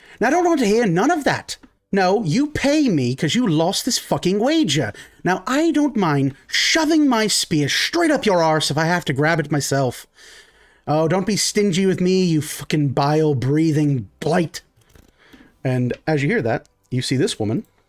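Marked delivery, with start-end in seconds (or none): 0.2-14.6 put-on, angry, hollered shouting rant. Voicing a priestess who shouts at two men over a lost wager: put-on shouting character. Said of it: "shouting at two individuals".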